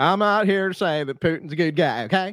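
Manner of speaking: high put-on Russian accent. Answering another speaker's question, in a put-on accent. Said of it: "You're so good at that accent".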